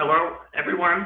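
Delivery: high-pitched put-on puppet voice. Asked for an accent, trying a greeting in a Kermit the Frog voice. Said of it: "I could try doing Kermit the Frog".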